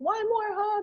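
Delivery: acted, very high, sobbing, bawling little girl voice. Retelling a daughter begging as she ran out: imitating a child bawling. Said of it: "And she was bawling".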